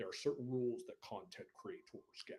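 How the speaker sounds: very hushed, dropped-down, low voice. Talking about being a content creator, dropping into a low voice. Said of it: "I like that low voice".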